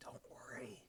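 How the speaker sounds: in a whisper. Voicing a character who puts a hand on a shoulder: whispering. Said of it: "just whispers".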